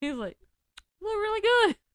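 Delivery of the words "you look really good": very high, loud fake sobbing breaking into laughter. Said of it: "he tried to cry, and he started laughing".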